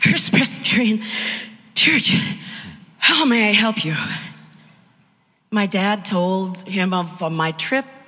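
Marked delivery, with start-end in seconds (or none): 0.0-3.9 acted, out-of-breath, high-pitched voice. Retelling a phone call to a church, imitating a breathless answer. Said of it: "this breathless person answered the phone".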